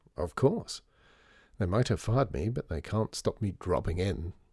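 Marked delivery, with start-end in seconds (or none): none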